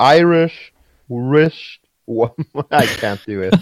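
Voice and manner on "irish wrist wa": slow, careful Irish-style pronunciation of wristwatch. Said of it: "I can't even say it slow".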